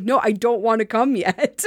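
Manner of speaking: normal talking voice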